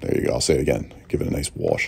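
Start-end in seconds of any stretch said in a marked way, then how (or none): 1.1-1.9 very low-voiced New York accent. Speaker repeats his line for viewers in a new york accent. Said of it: "you guys love my New York accent".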